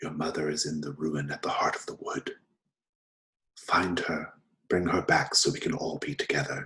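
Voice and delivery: soft, hushed whisper throughout. The player's father's head whispers to the player character, whispering. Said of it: "your father's head whispers to you".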